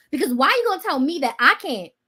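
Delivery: plain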